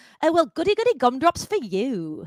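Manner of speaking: put-on sing-song Australian accent. Recall what a friend from elementary school used to say, imitating an Australian friend. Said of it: "a friend in elementary school who was Australian, and he would go".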